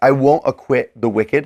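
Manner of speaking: normal talking voice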